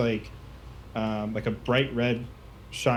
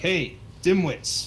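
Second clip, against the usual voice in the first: mocking, high-pitched taunting call-out; 6 semitones higher than usual. Narrating an ambush, voicing a kid calling out to the players, taunting call-out. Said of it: "you hear a voice uh call out".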